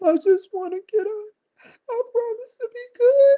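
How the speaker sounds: put-on blubbering, very high fake sobbing. Imitating jailed people who acted tough and now cry: mock crying like a sissy. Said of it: "they be crying like little sissies".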